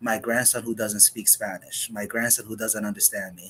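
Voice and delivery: ordinary talk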